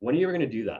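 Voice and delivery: condescending, pitch falling on "that". Showing how a question asked with a descending tone sounds condescending, falling tone at question end. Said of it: "uses a descending tone, it can become condescending".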